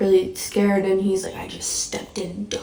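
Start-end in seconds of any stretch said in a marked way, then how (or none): 1.4-2.6 sinister, evil, menacing whisper. Retelling a dream where a figure cusses at the speaker: imitating an evil, cussing voice. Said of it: "being so evil".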